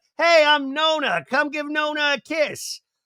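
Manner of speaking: very high, put-on New Jersey accent. Playing Nona, one of the speaker's Jersey people, greeting the kids: put-on New Jersey accent. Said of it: "going to be with that accent".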